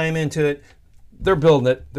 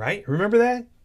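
ordinary talk, nothing marked

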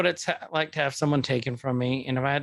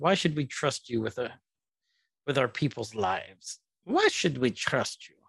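bad put-on villain accent. Recounting a movie scene for a co-host, doing Shuri with the wrong accent. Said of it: "That wasn't even the right accent".

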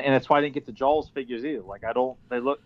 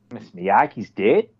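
Boston way of talking; 4 semitones lower, 4 dB louder than usual. Showing how a Boston Tony would say the line: Boston accent. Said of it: "how would a Boston Tony say".

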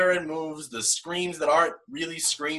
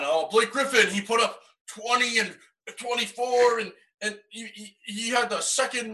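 higher-pitched, dopey, dumb idiot voice; 6 semitones higher than usual. Mocking what people say about Blake Griffin, in a dumb idiot voice. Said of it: "stop doing my idiot voice".

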